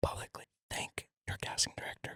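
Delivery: hushed, secretive whisper. Speaker tells a listener to thank their casting director, whispered like a secret. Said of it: "I gotta whisper it as a secret".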